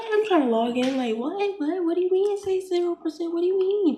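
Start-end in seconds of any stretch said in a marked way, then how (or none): 1.2-4.0 frantic, high, panicked, freaking-out disbelief and confusion. Retelling the call when the test result came back zero percent: retelling freaking out. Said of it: "I'm like freaking out".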